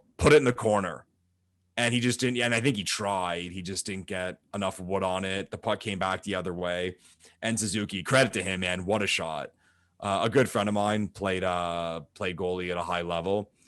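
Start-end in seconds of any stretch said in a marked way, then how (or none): 0.2-1.1 play-acted, loud yelling. Retelling yelling at the tv during a game: imitating own past yell. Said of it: "So out loud, I yell".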